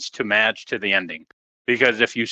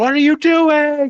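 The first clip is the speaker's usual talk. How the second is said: mock panicked outburst, higher and louder; 6 dB louder than usual. Retelling a wrestler freaking out inside the pod: imitating someone freaking out. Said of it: "Bianca's freaking out in the pod".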